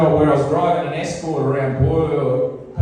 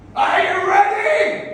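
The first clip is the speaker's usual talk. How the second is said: very high, bellowing call. Retelling knocking on his door and hearing him from behind it: retelling a bellow. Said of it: "there's this bellow from behind the door".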